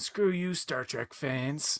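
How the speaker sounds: put-on uber nerd voice. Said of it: "It's J J saying".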